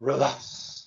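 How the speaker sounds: calm breathy delivery. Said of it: "I want you to say it like this".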